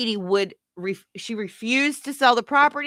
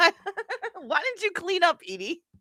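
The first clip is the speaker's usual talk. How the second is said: scolding, nagging tone, pitched up and slow; 9 semitones higher than usual. Retelling what she asked Edie: imitating her scolding question. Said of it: "She goes".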